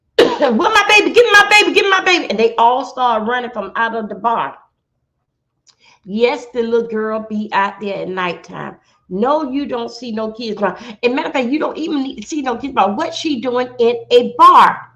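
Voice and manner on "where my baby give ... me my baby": screaming, higher and louder. Retelling a shootout where a woman screamed for her child: imitating someone screaming. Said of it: "she started screaming".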